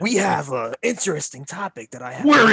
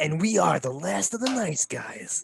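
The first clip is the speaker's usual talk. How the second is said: put-on raspy movie trailer announcer voice; 6 dB quieter than usual. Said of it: "we sound like the guy that introduces the trailers for the movies".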